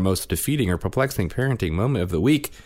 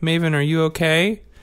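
put-on gentle, caring, sweet, high little-kid voice; 9 semitones higher than usual. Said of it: "he was being sweet".

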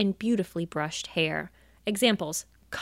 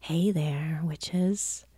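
eerie, creepier voice; 3 semitones lower than usual. Opening the final segment and greeting the witches in a creepy voice. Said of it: "I felt like I got creepier".

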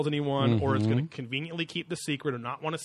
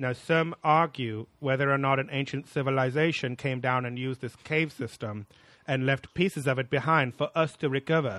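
slightly lisping talking-head voice. Quoting a commentator on a show: Phil Coppins impression. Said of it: "That was my best impression".

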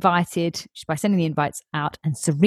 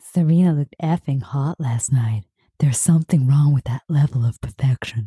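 put-on creepy voice, lower; 5 semitones lower than usual. Imagining aloud how Chuck Bass would say the line: Chuck Bass impression. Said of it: "I can hear him, like".

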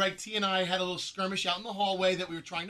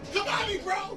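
mock screeching, very high-pitched, shrill screaming; 13 semitones higher than usual. Re-enacting a line screamed on air: imitating a scream. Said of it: "you screamed the words".

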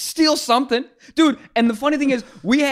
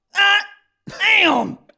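mock very high, sudden, blurted yell of alarm; 9 semitones higher than usual. Retelling finding the car window shattered: imitating own yell. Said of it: "I yell out".

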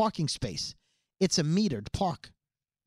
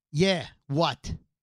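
put-on New Jersey attitude; 2 semitones lower than usual. Retelling how two guys in a car answered: imitating new jersey attitude. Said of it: "the New Jersey attitude".

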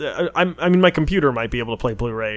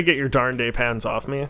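ordinary talk, nothing marked

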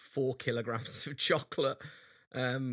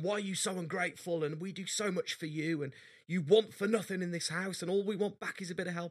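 heated, high-pitched shouted rant; 7 semitones higher than usual. Retelling an argument with an eleven-year-old, imitating himself shouting. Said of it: "I'm shouting at her".

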